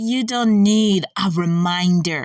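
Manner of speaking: hissed slowly, every word stretched out. Narrating as Shadowbook holds Pimpernel by the chain, hissing, drawing every word out. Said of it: "he hisses, drawing every word out".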